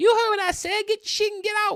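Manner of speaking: very high, very loud comic bark. Quoting a movie line in a held-back Chris Tucker impression. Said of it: "I can do a better Chris Tucker impression".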